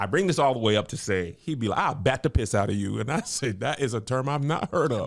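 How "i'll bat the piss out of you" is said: mimicked New Orleans speech. Quoting a man from his videos, imitating New Orleans accent. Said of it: "It's a whole New Orleans universe".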